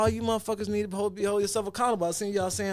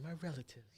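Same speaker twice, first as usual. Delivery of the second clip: put-on upscale, proper-sounding fancy voice; 5 semitones lower, 17 dB quieter than usual. Imitating how they would talk about relatives: mocking fancy voice. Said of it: "that do sound like some fancy ass shit. They would say".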